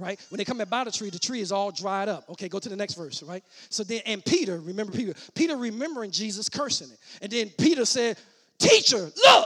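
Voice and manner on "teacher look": mock-excited, much higher, louder. Teaching a Bible passage, speaker voices Peter spotting the withered tree, acting out Peter's excitement. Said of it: "like he's all excited".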